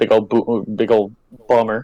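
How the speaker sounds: stuttering, stumbling over a cut-off word, restarting. Closing a podcast episode for the first time, stuttering. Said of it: "sorry that I'm stuttering".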